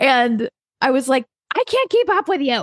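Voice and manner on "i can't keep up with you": mock fed-up, pitched-up, pissy, irritated tone. Retelling what she said to him while she kept missing the ball, retelling getting pissy. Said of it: "I started getting pissy".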